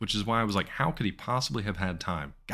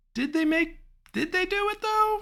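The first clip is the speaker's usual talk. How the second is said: voice creeping up, climbing very high; 4 dB louder than usual. Speaker, unsure whether a sequel was made, asks again: voice rising higher. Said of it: "My voice is getting higher".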